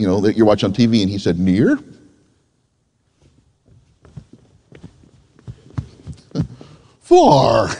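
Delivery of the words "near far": put-on rough, bad attempt at a swooping kids' puppet voice. Retelling a children's TV puppet lesson on near and far: imitating the puppet's voice. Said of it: "a horrible illustration or understanding of that voice there".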